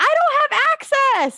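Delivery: put-on very high-pitched small child voice. Recalling kids' theater online during the pandemic, imitating a little kid's voice. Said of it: "a little kid's voice be like".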